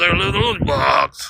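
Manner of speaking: put-on under-breath voice. Retelling what a man said, under his breath. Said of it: "it was kind of under his breath".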